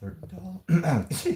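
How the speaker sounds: voice cracking. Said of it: "My voice cracked".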